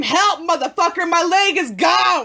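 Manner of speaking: high, frantic screamed plea. Speaker recounts how she screamed for help: retelling her own scream. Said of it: "I scream".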